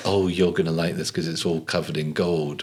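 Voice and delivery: put-on mocking tone. Acting out what the gold carriages seem to say: imitating a mocking tone. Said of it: "you're mocking".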